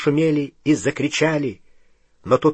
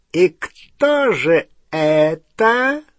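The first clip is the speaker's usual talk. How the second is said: smooth, serpentine voice; 3 semitones higher than usual. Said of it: "спросил он своим мягким змеиным голосом".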